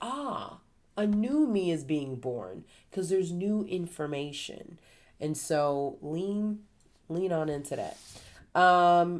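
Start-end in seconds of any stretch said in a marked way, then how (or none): none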